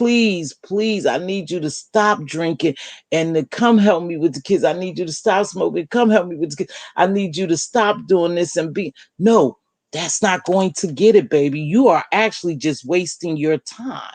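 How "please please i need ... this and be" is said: tearful, crying, begging pleading tone. Acting out a plea to someone to stop drinking: put-on begging and pleading. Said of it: "begging and pleading and crying".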